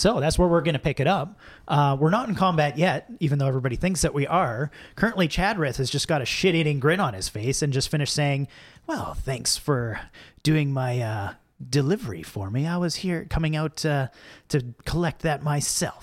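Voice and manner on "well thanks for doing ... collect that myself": drawn-out, hissing villain tone. Picking up the scene, the speaker voices Chadrith: slithery Chadrith voice. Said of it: "This is a little more slithery".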